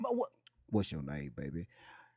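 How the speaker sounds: hushed, pitch-sliding, swooping late-night radio voice. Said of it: "[name] don't be sounding like that".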